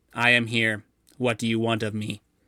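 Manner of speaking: mechanical robot voice, flat monotone, no inflection. A shapeshifter turned robot answers the party, in a flat robot monotone. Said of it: "In a monotone voice".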